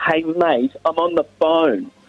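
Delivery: annoyed, angry, high-pitched voice. Retelling how a man snapped that he was on the phone: imitating an angry tone. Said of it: "in an angry tone go".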